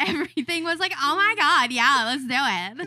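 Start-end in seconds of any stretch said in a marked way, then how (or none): 1.0-2.9 put-on loud Valley girl voice. Replaying past self talking like a total Valley girl. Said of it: "I turned into a total Valley girl".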